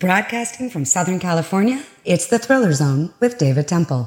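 on-air radio announcer voice. Asked for his radio voice, he shows it off in a radio announcer voice. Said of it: "You've got the radio voice".

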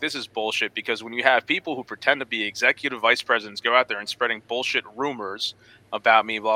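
normal talking voice

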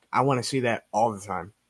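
usual speaking voice

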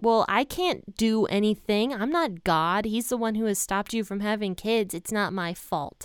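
mock angry, furious, infuriated tone. Retelling a quarrel, answering a demand: imitating an infuriated reply. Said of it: "Jacob becomes infuriated with her".

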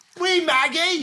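put-on Scottish accent, pitched very high, drifting. Imitating Margot Robbie's accent in a joke: Margot Robbie impression gone Scottish. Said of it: "You're making her Scottish".

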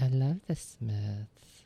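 very slow, drawn-out, word-by-word line reading. Retelling a movie scene, the speaker tries the line again as a Zoe impression. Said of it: "I'll try it again".

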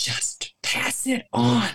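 slow, loud stage whisper. Retelling what Shema said while passing it around the circle, loud whisper. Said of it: "in a loud whisper".

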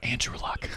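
whispering. Repeating a name while comparing prospects, whispering. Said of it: "sorry, I have to whisper".

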